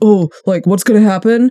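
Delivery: plain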